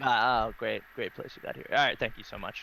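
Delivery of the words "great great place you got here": soft, dry, sarcastic tone. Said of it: "Do I detect a bit of sarcasm in your voice".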